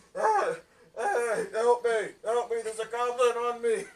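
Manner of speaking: frantic, high, very loud, panicked screaming. Voicing a beaten man pinned by a goblin: NPC screaming for help. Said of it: "he's just, like, screaming".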